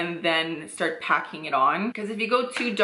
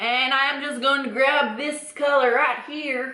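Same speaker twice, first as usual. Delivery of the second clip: casual put-on Texas accent, pitched up; 6 semitones higher than usual. Talking viewers through a makeup look, the speaker uses a Texas accent. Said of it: "Don't know why I'm doing a Texas accent".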